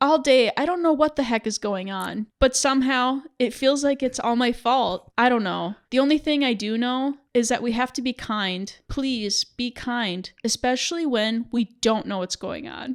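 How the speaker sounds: ordinary talk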